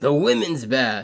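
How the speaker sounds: put-on storyteller narrator voice, like a storybook. Introducing a scene, switching into a narrator voice: put-on narrator voice. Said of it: "I gotta do the narrator voice".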